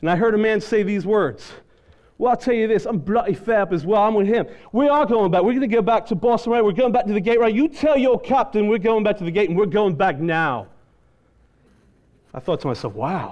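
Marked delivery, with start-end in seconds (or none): 2.2-10.7 put-on heavy, broad British accent. Retelling what a man said right behind the speaker's ear, in a thick British accent. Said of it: "I heard this thick British accent".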